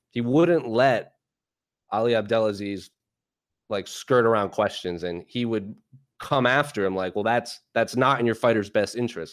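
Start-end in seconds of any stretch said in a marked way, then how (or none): 7.1-9.3 put-on stern voice. Recalling Luke pressing his interviewee during an interview, imitating Luke sounding stern. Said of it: "I remember him saying that like sternly".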